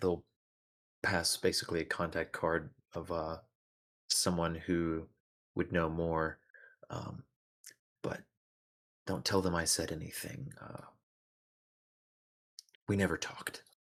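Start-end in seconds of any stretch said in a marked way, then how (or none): 8.0-13.6 secretive, conspiratorial tone. Voicing a character who passes along someone's contact card, conspiratorial. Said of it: "in a very conspiratorial way".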